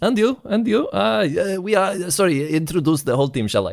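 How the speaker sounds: high-pitched, halting, stumbling character voice. Voicing a rat owner greeting the players: voicing Gablinski. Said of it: "I'm Gablinski".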